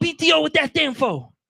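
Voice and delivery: slow, high-pitched voice talking with no teeth. Retelling how his dad answered about job benefits, imitating dad with no teeth. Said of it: "No teeth".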